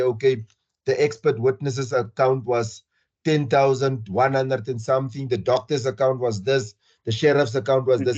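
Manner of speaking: plain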